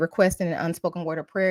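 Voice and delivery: ordinary talk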